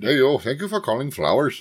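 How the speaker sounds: put-on Southern accent. Imitating the answering-service message at Flowers, heavy-accent Flowers phone message. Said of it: "has a heavy accent".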